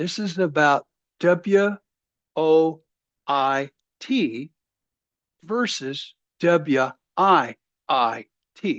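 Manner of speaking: very slow, halting, broken up mid-phrase. Speaking to viewers about an imperative point, the speaker says it very slow. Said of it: "I'm going to say it real slow".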